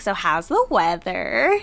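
slow voice with wide-ranging pitch.

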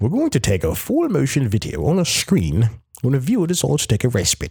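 put-on fancy voice, high and swooping. Reading a quote aloud, putting on a fancy voice. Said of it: "That's my fancy voice".

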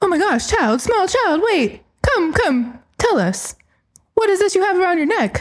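put-on, bewildered, astonished reporter voice. Playing a bewildered reporter who comes to interview a kid: acting a bewildered reporter. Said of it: "Chantel, please play the reporter".

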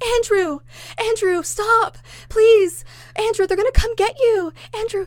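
acted crying, very high, tearful and pleading. Retelling how a mother grabbed her screaming son: imitating a mother crying. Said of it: "now she's crying because he's lost it".

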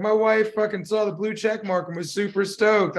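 ordinary delivery

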